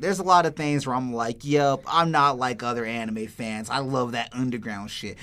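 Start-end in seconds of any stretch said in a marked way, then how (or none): none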